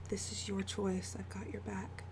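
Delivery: very quiet, soft, close-up half-whisper. Voicing a character comforting another character while holding her hand: half-whispering. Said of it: "And she just whispers".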